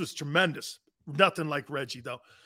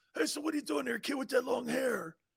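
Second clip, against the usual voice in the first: very soft, very quiet, scratchy, raspy voice; 8 semitones higher, 12 dB quieter than usual. Asked if he can do Reggie for someone: Reggie impression. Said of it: "He had that, like, raspy voice".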